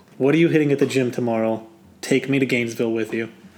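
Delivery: plain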